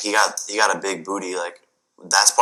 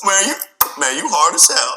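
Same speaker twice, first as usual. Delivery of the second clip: high, slow, stretched-out mocking taunt.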